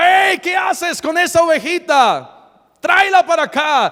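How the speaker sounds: acted loud hollering. Retelling David shouting at the lion to return the sheep: imitating David shouting. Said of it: "David le gritaba".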